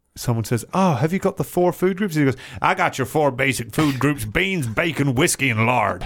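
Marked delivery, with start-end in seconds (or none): 2.7-6.1 put-on grizzled old prospector voice. Quoting the chef from an animated film, grizzled prospector voice. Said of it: "Grizzled prospector speak".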